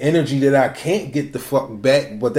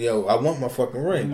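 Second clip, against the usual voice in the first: mock demanding tone, quieter; 2 semitones lower, 6 dB quieter than usual. Imitating how someone else would ask for a ring back: imitating a demanding tone. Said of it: "you sound like you're demanding".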